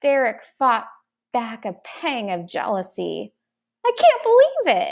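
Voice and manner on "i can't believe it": very high shouted line. Derek thumps his brother Clep on the back after Clep's first kill: shouting. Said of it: "he shouted".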